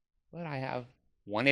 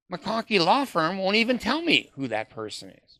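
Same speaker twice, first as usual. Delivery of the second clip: high-pitched voice. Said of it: "I go".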